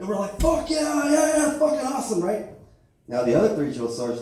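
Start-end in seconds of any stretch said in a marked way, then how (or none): 0.4-2.2 mock, loud, very high whooping cheer. Retelling recruits watching a drill sergeant shoot: imitating loud cheering. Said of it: "they hear us cheering".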